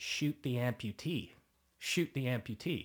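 play-acted mild half-yell, words spaced out slowly. Retelling what a director on set screamed: imitating someone screaming. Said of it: "he was screaming it".

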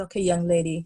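put-on a light touch of West Indian accent. Speaker quoting a woman handing them a book, with a slight west indian accent. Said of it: "she had a bit of a West Indian accent".

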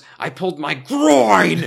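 almost angry. Retelling what Tim said to Mark about his injury: almost angry Tim voice. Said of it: "in an almost angry, uh, tone".

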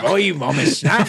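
put-on West Country accent. Repeating a backwards line from a played recording: imitating a West Country accent. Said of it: "the West Country accent I was talking about".

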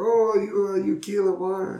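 very high put-on wealthy foreign voice. Retelling a TV interview, imitating Sacha Baron Cohen's foreign rich guy. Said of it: "some rich guy that, like, is a foreigner".

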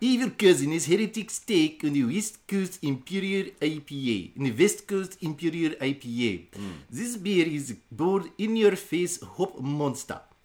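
put-on Russian accent. Reviewing a West Coast Imperial IPA beer, in a Russian accent like Borat. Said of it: "You a Russian accent".

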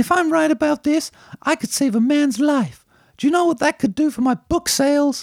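woman's voice pushed very high, put-on. Quoting a film line for others to guess: high-pitched woman's voice. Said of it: "remember the high pitch one".

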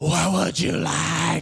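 slow, drawn-out stage whisper. Imitating theater staff taking orders during a movie: imitating a stage whisper. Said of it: "a stage whisper where they're like".

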